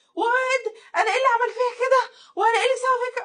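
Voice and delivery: high, loud, panicked, freaked-out yelling.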